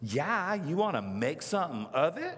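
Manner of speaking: put-on snarky, sassy, bratty kid voice. Retelling a child's reply to a giant voice, mock-snarky kid voice. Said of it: "this snarky voice goes".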